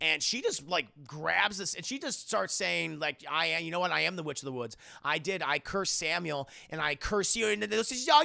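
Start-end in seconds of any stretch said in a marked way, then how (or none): none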